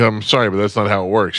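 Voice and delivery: put-on super polite voice. Retelling a driver's reply to a bride who won't pay: imitating someone being super polite. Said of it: "He's being super polite".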